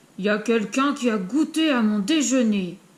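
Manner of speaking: hefty, big-voiced reading. Narrator reading a bear story, Papa Bear speaking in the kitchen, big voice. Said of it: "papa ours dit avec sa grosse voix".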